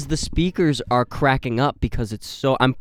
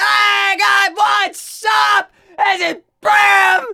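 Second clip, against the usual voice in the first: very high, very slow, drawn-out scream; 5 dB louder than usual. Co-host mocks the other host's sound-check greeting, imitating someone screaming.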